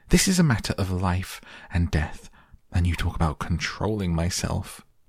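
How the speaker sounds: plain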